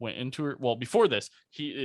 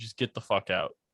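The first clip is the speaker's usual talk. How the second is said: put-on passive-aggressive voice; 2 semitones lower than usual. Retelling how a woman woke to an intruder by her bed: mock passive-aggressive tone. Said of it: "in a passive aggressive tone".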